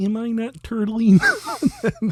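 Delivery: very high, swooping, sing-song, drawn-out turtle voice. Doing a Dana Carvey character line: Dana Carvey turtle voice sounding like Kermit. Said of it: "That's Kermit".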